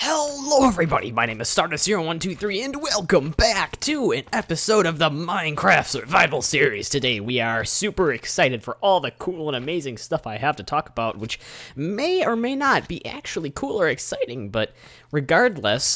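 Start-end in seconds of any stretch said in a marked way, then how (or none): 11.8-16.0 breaking voice, cracking mid-sentence. Opening a Minecraft Survival Series episode to viewers, with a voice crack. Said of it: "sorry of that voice crack I just had there".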